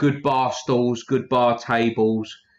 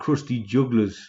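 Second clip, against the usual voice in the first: clumsy, off-target, terrible put-on Geordie accent. Repeating a name he was just reminded of, in a terrible Geordie accent. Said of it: "that's a fucking Geordie accent".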